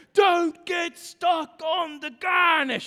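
loud, drawn-out, put-on angry screaming like a head chef. Retelling a cooking scene where the chef screams at a cook: imitating Gordon screaming. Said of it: "he's screaming at her".

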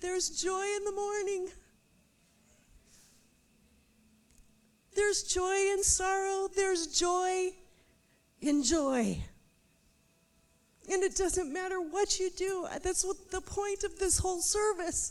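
weepy, near tears. Speaking during the service, admitting being weepy today, weepy and near tears. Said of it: "Sorry, I'm really weepy today".

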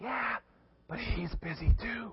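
put-on very hushed, high, little-kid half-whisper. Retelling a child telling a telemarketer his age: imitating a child half-whispering. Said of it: "little Jimmy keeps whispering".

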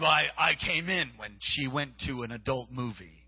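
slow, strange voice of a possessing spirit. Retelling a prayer session where a voice came out of a woman: imitating a possessed woman's changed voice. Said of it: "the voice told her".

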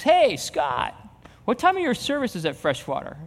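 loud, sing-song called-out voice. Retelling a man at a game calling out a question: imitating someone saying it loudly. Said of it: "he says it really loud".

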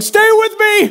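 very high, urgent shout. Telling of rushing something to the Mac store by hand: retelling own yell. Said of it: "I'm yelling".

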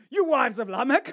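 loud, brutish put-on caveman voice. Reading a Bible verse where a man addresses his wives, in a caveman voice. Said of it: "he's like a caveman".

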